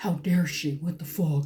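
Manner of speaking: put-on shocked, indignant, freaked-out outraged blurt. Retelling a brother's reaction to a movie scene: imitating a freaked-out outburst. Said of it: "my brother just freaks out".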